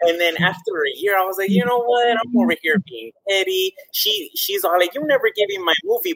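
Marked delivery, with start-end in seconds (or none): 4.9-6.1 playful, teasing grumble, pitched up, quick. Recounting what a friend said about a movie, imitating her joking complaint. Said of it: "but jokingly".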